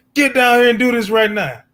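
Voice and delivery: very high, loud, commanding yell. Mimicking what a man does once the cameras go off: imitating someone yelling. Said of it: "you yelling like".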